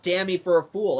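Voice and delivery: normal talking voice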